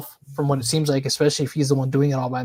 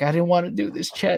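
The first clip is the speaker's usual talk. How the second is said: mock crying, higher pitch; 3 semitones higher, 4 dB quieter than usual. Imitating someone filing a restraining order: imitating someone crying. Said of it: "but he's crying".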